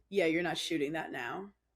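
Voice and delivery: mock-grave, dead-serious, no-nonsense, matter-of-fact tone. Retelling a reply to news of a Netflix special: imitating someone dead serious. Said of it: "dead serious".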